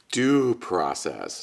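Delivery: humorous, playful emphasis on the words 'due process'. Explaining substantive due process to listeners, humorously emphasizing 'due process'. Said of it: "(humorously emphasized)".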